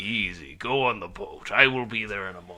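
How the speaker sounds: put-on gruff old salty sailor voice. Quoting the killer from a film, imitating an old sea dog voice. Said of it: "old sea doggy way".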